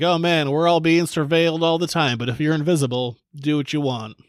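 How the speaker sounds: ordinary delivery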